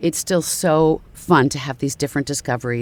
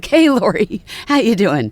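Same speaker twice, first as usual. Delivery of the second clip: high, loud talking through little giggles; 6 semitones higher, 6 dB louder than usual. Describing your foot and ankle doctor, imitate Doctor Harris's giggle-talking as he greets Lori. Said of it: "he's like a giggle talker".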